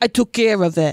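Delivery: put-on Italian-accented delivery. Retelling what he says when he comes home, with an italian accent. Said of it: "he says it with an Italian accent".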